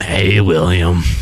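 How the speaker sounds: talking creature voice. Imitating a strange talking creature from a YouTube video, in a talking sphincter bug voice. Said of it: "Kind of like that".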